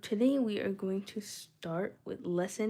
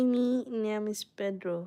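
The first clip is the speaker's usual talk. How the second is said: put-on Spanish accent; 3 dB louder than usual.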